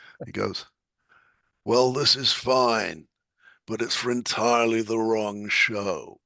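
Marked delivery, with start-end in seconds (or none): 1.7-6.0 put-on American accent. Retelling a script reader's blunt feedback: american accent imitation. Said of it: "that's a pretty good American accent".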